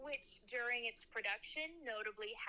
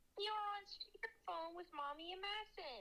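put-on baby talk voice; 9 semitones higher than usual. During a phone call on the podcast, the speaker talks in a baby voice. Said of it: "I was speaking in baby voice".

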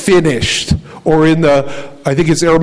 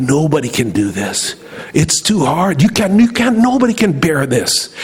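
put-on whispering tempter voice. Retelling a movie scene where Satan tempts Jesus in the garden: imitating Satan whispering. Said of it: "he's whispering to him".

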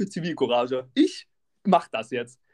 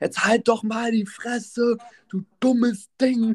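play-acted, high, fully escalated screaming; 7 semitones higher than usual. Retelling a fight where a man screamed back at a woman, retelling a screamed insult. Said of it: "komplett eskaliert haben da rumgeschrieben".

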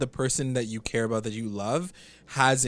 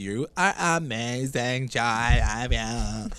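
put-on cartoon girl voice, much slower. Retelling what she said to Jai about his post, in a girl from Big Mouth voice. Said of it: "you made her sound like the girl from Big Mouth".

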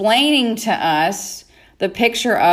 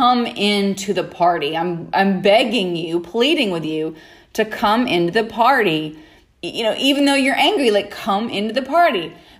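plain

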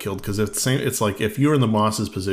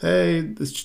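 high, fake scream.

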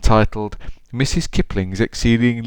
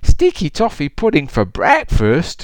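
sweet, delighted, high, sing-song cooing; 6 semitones higher, 4 dB louder than usual. A narrator reads the delighted old lady's reply to an invitation, cooing. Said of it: "she cooed".

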